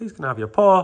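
belted out, very loud and high. Showing another speaker how to ask the dog: louder. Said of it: "say the paw louder".

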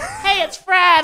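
very high, slow, loud put-on shout.

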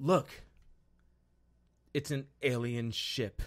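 mock deadpan monotone, flat with zero feeling. Retelling a military character's movie line, imitating a flat, emotionless delivery. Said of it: "I did it with as much emotion as he did".

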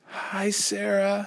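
weak, feeble voice. A sick girl greets a visiting classmate, weak, feeble greeting. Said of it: "said Ramona with the weakest smile she could manage".

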